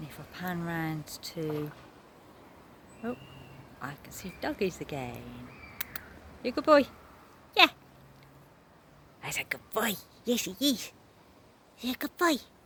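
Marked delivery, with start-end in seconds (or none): 6.4-12.4 very loud, high, swooping sing-song pet-talk voice. Speaker spots dogs while panning around and talks to them in dog voice. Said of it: "That's my dog voice".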